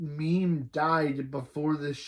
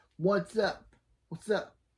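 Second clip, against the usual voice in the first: put-on New Jersey accent, much higher pitch; 5 semitones higher than usual. Reading out a chat message meant in a disguised voice, fake jersey boy voice. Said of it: "Jersey boy".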